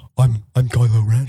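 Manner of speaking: put-on deep voice, low, flat, slow and deliberate. Comparing actors' charisma, doing a deep Adam Driver voice. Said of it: "a deep voice like this".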